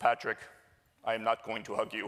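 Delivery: put-on Swiss-German accent. Quoting his classmate's reply during a class activity, imitating Adrian's Schwarzenegger-like accent. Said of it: "he has this very Arnold Schwarzenegger-like accent".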